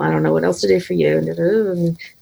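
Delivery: mumbling the words. Acting out a man looking down, twiddling his thumbs: mumbled speech. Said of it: "So I'm going to mumble".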